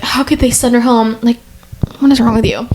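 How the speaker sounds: mock teary, tearful, sobbing crying voice. Retelling what a crying contestant said: imitating someone crying. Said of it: "This Leia girl's, like, crying".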